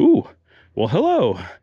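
put-on friendly, welcoming tone. Describing how everybody here greets you: imitating a welcoming greeting. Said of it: "there's just a tone in the voice that's a little bit more welcoming".

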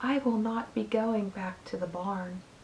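faint, very low, barely audible voice. Narrator reads one character's reply to another, in a very low voice. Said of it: "she spoke in a voice so low that Wilbur could hardly hear her words".

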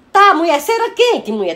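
high, loud, slow, outraged scolding cry.

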